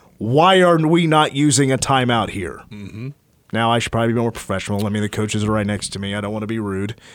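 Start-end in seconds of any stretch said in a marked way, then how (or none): 0.2-2.6 play-acted raised voice, pointed and deliberate. Retelling what he said after getting out of his chair, in a raised voice. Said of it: "I said in a raised voice".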